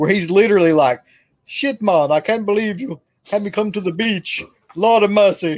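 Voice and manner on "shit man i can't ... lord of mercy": worst-ever bad put-on Jamaican accent. Describing a shark movie, quoting an actor's line: Mario Van Peebles' bad Jamaican accent. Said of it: "the worst Jamaican accent that has ever existed".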